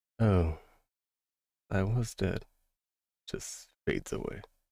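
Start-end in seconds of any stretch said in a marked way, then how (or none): 0.2-2.4 hushed whisper. A character with a thousand-yard stare speaks as his body fades away, whispering. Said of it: "as he whispers".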